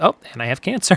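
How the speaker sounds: put-on casual, nonchalant, offhand delivery. Retelling a character's line from a film: nonchalant Claudette imitation. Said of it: "Just very nonchalantly goes".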